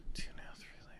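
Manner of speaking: soft, unvoiced whisper, as if to oneself.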